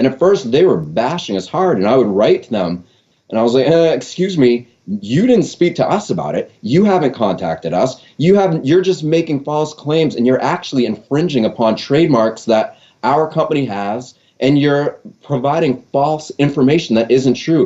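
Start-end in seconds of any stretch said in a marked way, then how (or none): none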